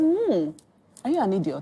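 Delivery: heavily sarcastic, belittling tone with swooping pitch. Retelling a parent's reply to a childish complaint: imitating father's sarcasm. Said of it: "my dad is the king of sarcasm".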